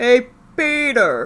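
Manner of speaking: loud, high voice. Answering a request to do Patrick Warburton: Patrick Warburton impression. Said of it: "The closest I get to Patrick Warburton".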